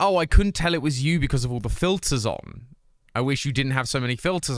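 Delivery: ordinary talk, nothing marked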